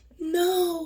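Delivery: tiny, small, high little voice. Retelling a victim's reply during a filmed beating: imitating a tiny voice. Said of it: "her little tiny voice".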